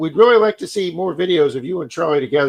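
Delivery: ordinary talk, nothing marked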